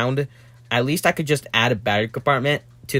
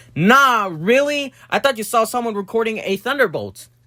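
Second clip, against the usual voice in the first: dripping sarcasm, pitched very high; 10 semitones higher than usual. Replying to another speaker's most obvious answer ever: sarcastic. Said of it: "I need to be sarcastic real quick".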